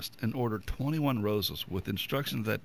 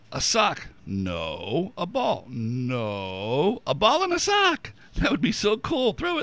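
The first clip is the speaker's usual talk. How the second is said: loud, swooping, sing-song, excited dog voice; 6 semitones higher, 7 dB louder than usual. Host counting down gifts for pets, doing a dog impression. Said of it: "Good dog impression".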